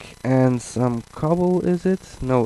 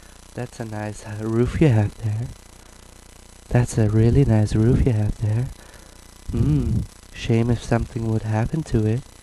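put-on game monster voice; 2 semitones lower than usual. Voicing a creeper eyeing the roof of the build: put-on creeper voice. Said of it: "They will go all like".

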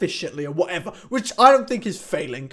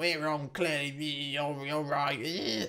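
acted-out hushed, very quiet, very slow, drawn-out sarcasm; 3 semitones lower, 10 dB quieter than usual. Retelling a reply to someone who said they didn't know: a sarcastic reply.

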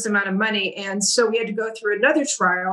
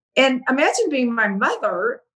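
ordinary delivery

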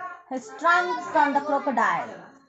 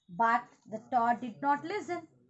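ordinary delivery, nothing marked

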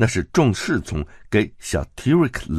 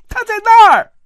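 shrill, booming yell, very high and very loud; 13 dB louder than usual. Narrator reads a character pointing someone out and shouting. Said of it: "大喊起来".

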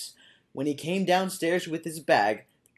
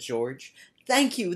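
ordinary delivery

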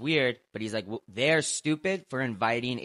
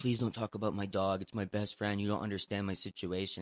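mock crying, quieter; 6 dB quieter than usual. Retelling what a fighter said after losing: imitating someone crying. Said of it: "crying after losing to Strickland and in his ear going like".

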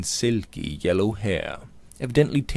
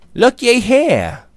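very high, very loud delighted, pleased cry; 13 semitones higher, 11 dB louder than usual. Luke finds a secret door in the casket and calls out, pleased exclamation. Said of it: "cried Luke, pleased at his discovery".

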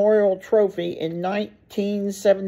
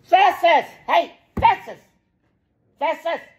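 very high-pitched, mean, harsh yelling; 9 semitones higher, 3 dB louder than usual. Calling out to a little dog that picks on another dog: yelling mean. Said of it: "I have to yell out Festus".

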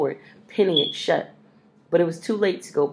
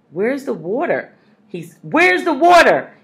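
loud, high, swooping scream, repeated; 8 semitones higher, 7 dB louder than usual. A man fighting a fire with a hose that gives no water, screaming. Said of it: "he screamed again".

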